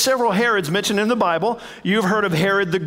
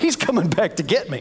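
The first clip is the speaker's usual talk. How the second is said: put-on spooked, fearful, freaked-out male voice. Retelling how a ruler reacted to news about Jesus: imitating a freaked-out man. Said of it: "He's a little freaked out".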